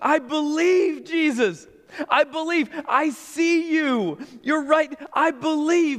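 begging tone.

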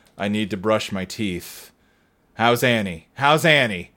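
low, flat, lifeless, dead-eyed monotone. Recapping a scene where Cooper wakes and answers Doc Hayward and Truman: imitating Cooper's dead-eyed monotone. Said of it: "Dead-eyed, like, monotone".

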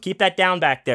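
high, barked stage yell. Retelling shouting from the stage toward people backstage: imitating own past yelling. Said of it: "I was on the stage yelling".

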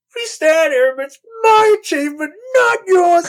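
play-acted, very high, shrill, over-the-top screeching. Quoting a favorite movie line: imitating Krennic screeching. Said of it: "over the top, just screeching at Grand Moff Tarkin".

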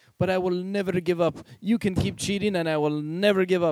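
mock cliché French accent. Retelling what a french player said while yelling at cheaters: stereotypical french accent. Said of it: "in a stereotypical French way".

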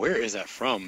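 plain

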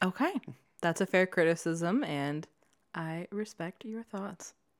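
soft, condescending, patronizing, head-patting tone. Answering the other speaker's criticism of the story's leads, in a patronizing tone. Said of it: "You sound like you're patting me on the head".

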